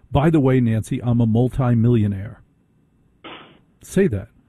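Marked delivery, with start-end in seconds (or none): none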